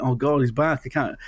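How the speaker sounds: usual speaking voice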